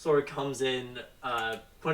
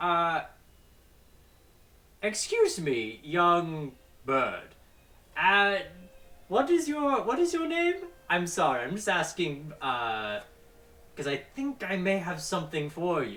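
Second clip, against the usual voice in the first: put-on hesitant old goblin voice, swooping pitch; 4 semitones higher than usual. Voicing an elderly goblin at a ticket booth: elderly goblin voice. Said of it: "the goblin sort of, like, squints a bit and goes".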